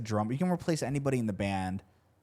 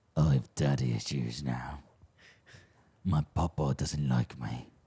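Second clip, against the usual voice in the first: mock-angry impression, slower; 9 semitones lower than usual. Teasing the other speaker about how they sound, imitating the listener's angry voice. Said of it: "That's what you sound like".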